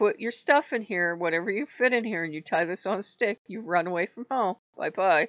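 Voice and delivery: put-on sarcastic tone. Retelling a mother's reply to a threat to run away: imitating mother being sarcastic. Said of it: "my mother was sarcastic as all get out".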